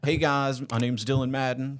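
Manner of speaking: clumsy, put-on, small-town country accent. Imitating his own old video intro: imitating his old country accent. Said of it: "I used to have a country accent".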